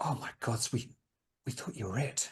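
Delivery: whispered, soft, breathy, deflated, relieved voice. A woman holding a bat realizes the shouter is human, drooping with relief. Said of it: "she just kind of droops and goes".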